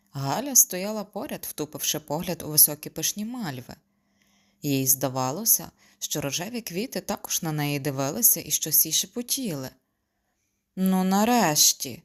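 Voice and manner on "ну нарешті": loud exclamation, relieved. A woman finally gets a cracked door open, relieved exclamation. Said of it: "полегшено вигукнула Соломія".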